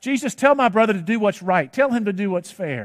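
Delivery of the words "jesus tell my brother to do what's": usual speaking voice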